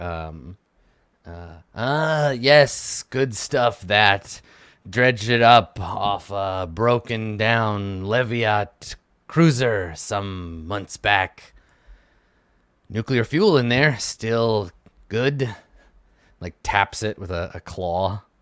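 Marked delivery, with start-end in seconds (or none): 1.7-15.5 layered, multi-tonal robotic machine voice. Voicing a junk-dealer creature showing off salvage: multi-tonal cyber enhanced voice. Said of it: "multi-tonal cyber enhanced voice".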